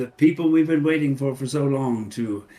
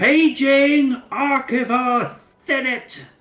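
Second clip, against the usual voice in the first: yelled, much higher and louder; 13 semitones higher, 6 dB louder than usual. A character pages someone aloud because there's no intercom, yelling a page. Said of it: "And she yells out".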